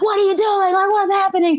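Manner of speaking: mock screaming, high-pitched. Retelling a man who stopped him and yelled, imitating him screaming. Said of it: "he's screaming at me like".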